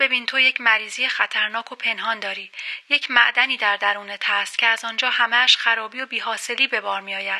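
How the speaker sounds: plain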